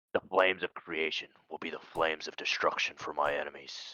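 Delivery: very quiet, low, hushed whisper. A player's character threatens enemies as the hammer ignites, whispering. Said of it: "and I whisper".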